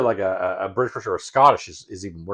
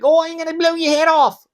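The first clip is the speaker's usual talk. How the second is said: put-on very high Australian accent; 6 dB louder than usual. Speaker imagines an Australian shooting in a firefight: Australian accent. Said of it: "can you imagine being in like a firefight with an Australian".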